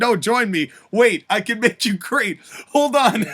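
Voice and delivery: pleading, begging, bargaining tone. Imagining a physically threatened figure's reaction: Paul Heyman impression, pleading. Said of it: "Paul Heyman would immediately, when he's threatened physically".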